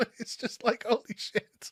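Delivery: stifled laughter through words. After asking viewers to leave a comment, the speaker is holding back a laugh. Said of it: "I'm trying not to laugh".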